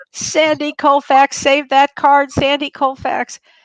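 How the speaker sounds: loud screaming. Recounting a man screaming in your ear, retelling a scream. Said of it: "the man screams in my ear".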